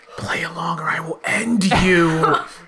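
whispering. A player character pulls someone close in a crowd and whispers to him. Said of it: "I'm going to whisper to him".

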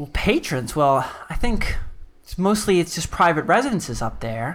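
cheery, smiling, pleasant woman's voice. Voicing a smiling, cheery woman behind a counter greeting a visitor: cheery, smiling woman's voice. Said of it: "She's a pleasant woman".

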